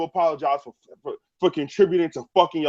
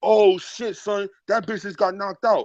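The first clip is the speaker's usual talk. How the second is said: rough, hard-edged, aggressive, grimy Brooklyn accent; 3 semitones higher than usual. Explaining how people from brooklyn talk, imitating aggressive brooklyn talk. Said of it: "they talk real aggressive and real grimy".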